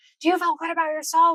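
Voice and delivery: high, aggressive, challenging scream. Speaker retells a man screaming at a kid on their team, acting out an aggressive scream. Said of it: "he screamed at him".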